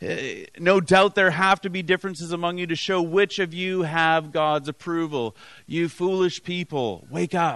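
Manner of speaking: ordinary talk, nothing marked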